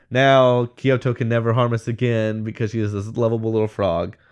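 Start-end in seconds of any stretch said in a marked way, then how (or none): none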